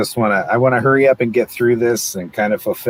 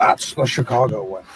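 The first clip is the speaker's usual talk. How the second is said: put-on Scottish accent voice. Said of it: "Sean Connery, like".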